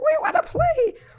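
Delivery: very high, squeaky little voice. Retelling a moment when everyone laughed at them, imitating a squeaky voice. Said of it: "I say it was like really more of".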